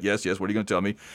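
grave, attentive, serious, earnest tone. Retelling a scene where Jakar leans over: serious Jakar impression. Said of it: "Jakar kinda leans over serious".

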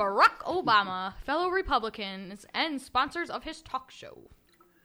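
mock posh newsreader voice. Reading a news article aloud on request: put-on fancy reading voice. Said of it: "I'll try to do it all fancy like".

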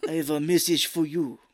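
put-on French accent. Retelling a movie character's line: imitating a French accent. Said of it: "I don't know why he's turning French now".

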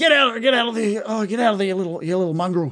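drowsy, just-woken-up voice. Voicing a character waking to a zombie gnawing his feet: groggy, just woken up. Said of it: "he's a little groggy".

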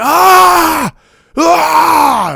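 high-pitched, loud, straining yells.

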